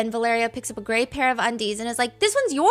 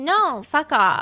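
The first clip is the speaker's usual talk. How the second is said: mock sulking, pouting tone; 3 semitones higher than usual. Retelling how Valeria pouts when Vivian hugs her: imitating a pouting refusal. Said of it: "Valeria pouts".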